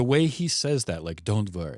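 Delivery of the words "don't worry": put-on breathy voice with German accent. Quoting a film line the way the actor says it: imitating Udo Kier's breathy delivery. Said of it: "He's just chewing his way through that line".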